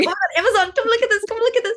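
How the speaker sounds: put-on very high, thrilled, excited, rapid calling out. Retelling calling a friend to come look: imitating excited calling out. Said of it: "our excitement about it didn't die at all".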